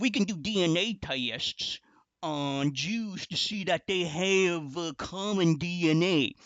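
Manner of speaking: put-on rural country accent.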